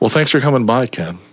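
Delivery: silky smooth radio announcer voice. Thanking Ken for coming by, silky smooth radio voice. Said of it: "There's that voice".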